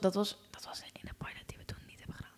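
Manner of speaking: unvoiced, whispered aside.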